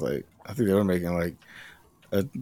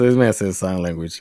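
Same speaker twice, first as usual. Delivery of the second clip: usual speaking voice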